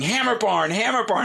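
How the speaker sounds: put-on acted very high toddler shriek, repeated, child scream. Retelling a four-year-old daughter walking into the store: imitating a child screaming. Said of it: "she starts screaming".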